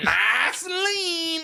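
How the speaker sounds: imitated odd Southern accent. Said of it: "talking in the weirdest fucking accent".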